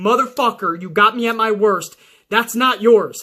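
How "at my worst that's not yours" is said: normal talking voice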